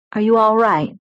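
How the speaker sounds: tender, gentle tone. He checks on the narrator, asking tenderly. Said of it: "he asked tenderly".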